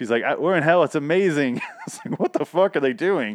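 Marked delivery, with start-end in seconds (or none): 0.4-1.6 put-on excited gushing, much higher. Describing a scene, the speaker acts out a woman's reaction, mock super-excited. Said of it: "she's like all super excited and excited about being in hell".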